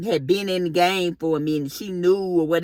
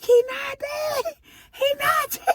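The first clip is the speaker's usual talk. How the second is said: very high-pitched, squealing scream. Retelling running from the room after his hand touched hers, retelling her own scream. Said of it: "I just ran out the room screaming".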